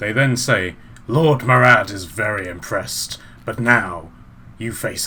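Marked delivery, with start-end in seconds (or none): 1.1-5.1 raspy chorus, many voices overlapping at once. A game master voices the snail men all talking at once, in raspy voices. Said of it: "in these like, raspy voices".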